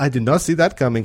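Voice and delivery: English spoken with a put-on French accent. Retelling what the french man beside him said, in a french accent. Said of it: "that's my French accent".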